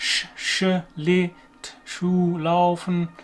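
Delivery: very slow, careful, drawn-out German "Schlittschuhlaufen". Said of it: "really difficult for us to pronounce".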